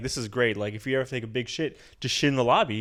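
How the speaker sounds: ordinary talk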